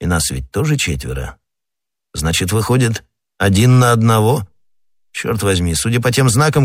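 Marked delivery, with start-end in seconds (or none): none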